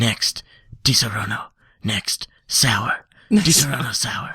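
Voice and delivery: sultry commercial voice. Imitating a liquor commercial announcer: sexy commercial voice. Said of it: "this real sexy, sexy voice".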